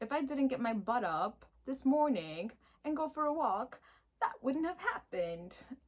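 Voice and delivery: unintended British accent. Speaking to an audience, slipping into a UK accent. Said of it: "Please don't judge my U K accent right now".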